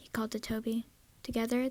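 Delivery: plain reading voice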